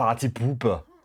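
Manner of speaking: put-on Austrian accent. A streamer whose OBS remote keeps dropping says it in Arnold accent. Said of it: "you have to say it with the Arnold accent".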